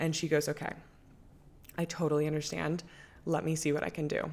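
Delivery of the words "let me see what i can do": ordinary talk, nothing marked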